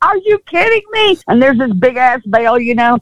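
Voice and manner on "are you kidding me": very high, shocked, disbelieving shriek. Retelling being hit by a thrown bell while on stage, retelling own scream. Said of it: "I'm screaming".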